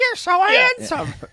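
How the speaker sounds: very high, loud puppet-dummy ventriloquist voice. Joking about puppeting a dug-up corpse: ventriloquist voice. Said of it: "doing a ventriloquist voice".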